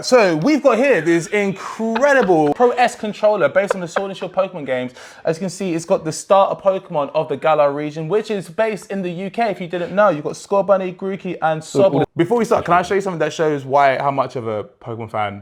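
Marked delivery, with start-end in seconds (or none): 0.0-12.1 high, fast infomercial sales patter. Asked by the other speaker to present a controller as an infomercial, infomercial sales pitch. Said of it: "Can you do like an infomercial uh, sale thing?".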